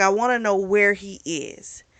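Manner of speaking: ordinary talk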